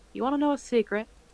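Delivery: amused, teasing, with a little chuckle. Voicing a character who leans toward someone and shares a secret: chuckling with a smile. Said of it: "smile a little bit and kinda chuckle to herself".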